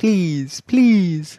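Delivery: goofy, dopey cartoon moose voice. Pleading with listeners to email a better section title, sounding like Bullwinkle. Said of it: "You sounded like Bullwinkle".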